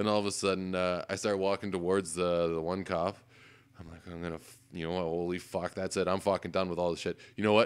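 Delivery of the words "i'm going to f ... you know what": ordinary delivery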